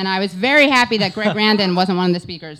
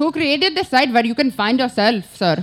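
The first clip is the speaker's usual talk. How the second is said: high-pitched put-on Indian English accent; 5 semitones higher than usual. Retelling what a man said to them, imitating an Indian accent. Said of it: "now it's like an Indian accent".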